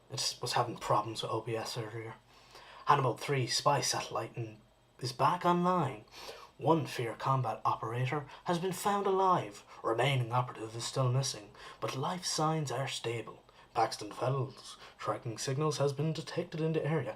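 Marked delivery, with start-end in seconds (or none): 2.8-17.1 dramatic cartoon narrator voice. A streamer reading mission updates from the game aloud, in a Clone Wars narrator voice. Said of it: "Clone Wars narrator voice".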